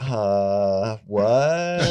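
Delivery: imitated mellow, laid-back LA voice. Describing how people from l.a. talk, imitating a mellow la speaker. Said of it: "you just mellow out".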